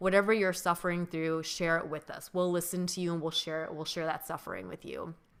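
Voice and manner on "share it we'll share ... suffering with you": normal talking voice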